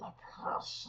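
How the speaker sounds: slow, drawn-out, very breathy whispered creature voice. Showing the difference between two voices: slower Smeagol voice. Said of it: "a slower version".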